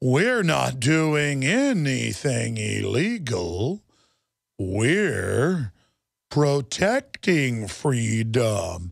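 very slow, low, robotic space alien voice. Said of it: "talks in like this space alien voice of".

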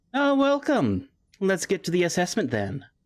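silky, polished, smooth, slightly high voice. A figure stepping through a door welcomes the group, smooth voice. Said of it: "From behind a bleached skull mask speaks a smooth voice".

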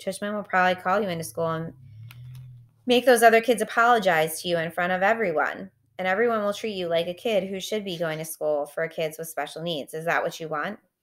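ordinary delivery

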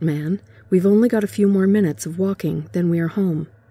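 ordinary delivery

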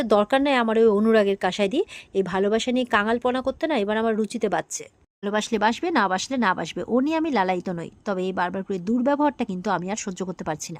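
ordinary delivery

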